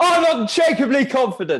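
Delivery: very loud, very high-pitched, confident shout. Showing how affirmations get shouted at home: retelling own shouted affirmation.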